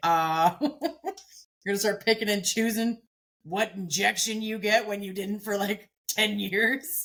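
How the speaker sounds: mocking, needling, dry sarcasm. Imitating the other speaker's imagined reply: imitating someone's sarcasm. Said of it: "your sarcasm be like".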